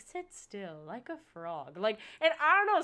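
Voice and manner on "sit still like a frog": imitated old man narrator voice. Retelling a sleep podcast's opening line: imitating the Tracks to Relax old man narrator. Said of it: "or he'll be like".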